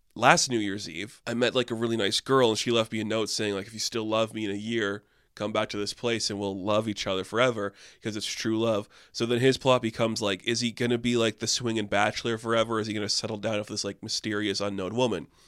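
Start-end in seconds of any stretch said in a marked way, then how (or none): none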